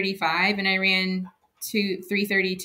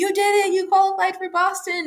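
mock very high, thrilled, excited shriek; 11 semitones higher, 3 dB louder than usual. Recounting crossing the finish line while she screamed over the fence, retelling an excited scream. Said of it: "like screaming at me".

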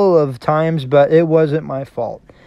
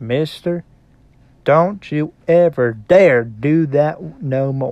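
much slower, drawn-out Southern brogue. Retelling what Ty Cobb said to him after the tag, in slow Southern brogue. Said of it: "in that southern brog of his, he said very slowly".

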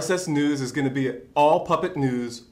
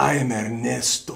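mock newscaster voice, pitched lower; 3 semitones lower than usual. Asked to imitate a sexy-news presenter, doing Ernesto's voice. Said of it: "can you do an imitation of Ernesto's voice?".

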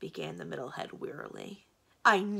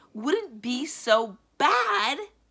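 very slow, high, loud, dragged-out yell; 5 semitones higher, 8 dB louder than usual. Aramin, answering the left head's encouragement, yelling. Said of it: "yelled Aramin".

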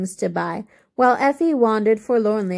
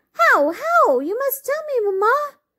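excited, eager, pleading cry, very high. A daughter dancing after her mother around the room, crying out. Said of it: "cried Effie".

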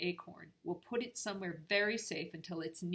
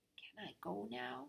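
soft, slow, unhurried, plain, unafraid voice; 4 semitones higher, 8 dB quieter than usual. Peabody, eyed suspiciously by Gerda, asks Nora, asked quietly. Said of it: "he asked quietly".

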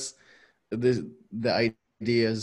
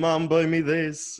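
put-on demanding little kid screaming, high, drawn-out; 7 semitones higher, 4 dB louder than usual. Describing an intense craving, imitating a screaming child in a supermarket. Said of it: "a child in like a supermarket just screaming".

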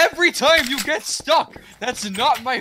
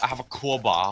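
put-on voice, lower and quieter; 7 semitones lower, 7 dB quieter than usual. Repeating a teammate's crowbar line during a game, sounding like a Nord. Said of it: "trying to sound like a, a Nord".

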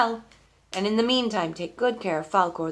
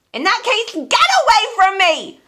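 very high, shrill, very loud screaming screech; 14 semitones higher, 8 dB louder than usual. A gnome, refused an answer, screams at the speaker to get away, screaming. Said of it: "Screamed the gnome".

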